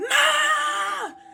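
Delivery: loud, panicked, high yelling.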